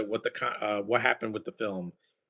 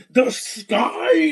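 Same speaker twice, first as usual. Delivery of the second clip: mock villain screaming, higher and louder; 13 semitones higher, 9 dB louder than usual. Mocking the villain in Guardians Three: imitating a villain screaming. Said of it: "Why are you screaming?".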